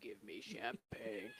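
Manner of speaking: put-on very low, deep, creepy old-man voice. Explaining how a line can come out funny, the speaker uses a creepy old man voice. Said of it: "like a creepy old man vibe to it".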